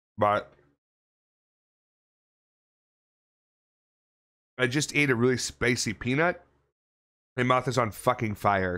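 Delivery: speaking with mouth full of ice. Greeting viewers before Dead Space gameplay, talking with mouth full of ice. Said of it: "I'm talking with my mouth full of ice".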